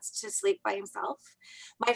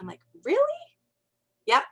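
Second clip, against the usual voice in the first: normal talking voice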